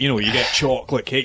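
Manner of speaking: ordinary talk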